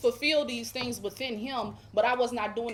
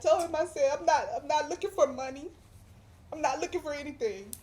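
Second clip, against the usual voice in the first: emotional, much higher pitch; 4 semitones higher than usual. Recounting what they told a pastor, getting emotional. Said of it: "I'm sorry, I'm getting emotional".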